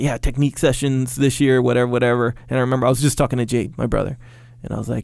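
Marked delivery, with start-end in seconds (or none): none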